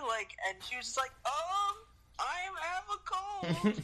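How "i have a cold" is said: put-on old woman voice, higher. Retelling a film scene, imitating old Sophie. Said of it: "you sound like an old woman".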